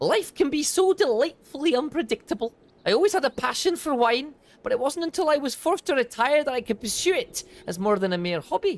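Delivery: put-on Scottish accent. Voicing a Lalafell character in the game, giving him a Scottish accent. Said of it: "I've decided to give him a Scottish accent".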